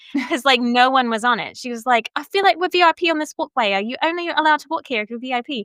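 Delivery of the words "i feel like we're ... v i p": cute put-on English accent, pitched higher. Retelling what the Dillon mom from England said on the walkway, imitating Felicity's English accent. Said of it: "I'm trying to do her accent".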